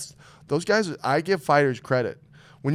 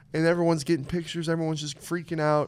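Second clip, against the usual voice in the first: ordinary talk, nothing marked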